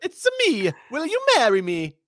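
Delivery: very high, squeaky, swooping sing-song character voice. Asked to do it in the Mario movie actor's voice, speaker obliges with that movie Mario voice. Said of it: "That's pretty good".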